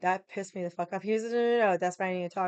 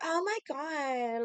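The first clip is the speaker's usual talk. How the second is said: mock girly voice, higher pitch; 8 semitones higher, 4 dB quieter than usual. Retelling a bar story, quoting a waitress apologizing: imitating a girly voice. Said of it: "such a girl".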